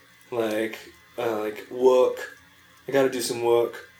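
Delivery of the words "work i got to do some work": put-on New York accent with mimicked speech impediment. Showing how one said words as a kid: imitating childhood New York accent. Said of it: "the kid who said alls like this".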